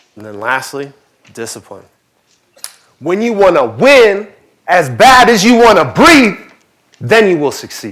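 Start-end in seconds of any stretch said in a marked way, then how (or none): 3.0-8.0 very loud, forceful, pitched-up, belted-out cry. Quoting a line about discipline in a Ray Lewis impression. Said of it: "That's my best Ray Lewis impersonation".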